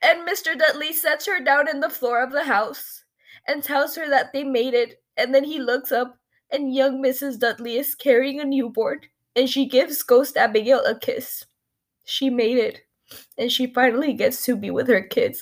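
tearful speech, openly crying throughout. Recapping a hard scene to listeners, the speaker is crying while talking. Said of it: "I'm crying".

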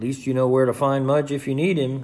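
plain reading voice

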